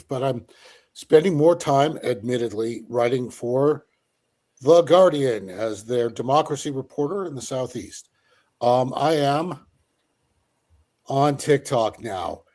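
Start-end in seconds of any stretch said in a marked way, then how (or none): 8.9-12.4 very slow, scornful, derisive drawl. Announcing being on tiktok now, with derision in the voice. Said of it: "Do you hear the derision in my voice?".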